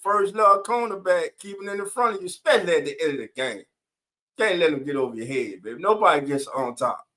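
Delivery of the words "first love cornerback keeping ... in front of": ordinary delivery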